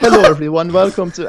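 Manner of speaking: put-on high, showy, great big Swedish accent. Describing a video host's opening, the speaker imitates him: imitating a Swedish accent. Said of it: "he's got like this great Swedish accent".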